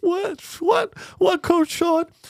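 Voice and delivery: very high-pitched, spoken through tears. Playing a dancer answering the coach: crying while answering. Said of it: "she's already crying".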